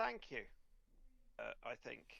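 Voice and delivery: nervous, anxious tone. Game master voicing a character whose accent a player complimented, nervous reply. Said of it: "she looks at you rather nervously and says".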